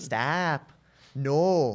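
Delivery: imitated Minnesota accent. Repeating a girlfriend's drunk word: imitating a Minnesota accent. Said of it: "Very Canadian sounding".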